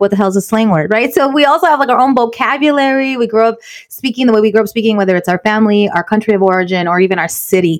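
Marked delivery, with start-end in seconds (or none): none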